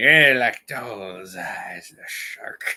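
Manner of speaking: very slow, each word stretched out. Doing a quick impression of the Jaws guy: Jaws guy impression. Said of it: "the Jaws guy".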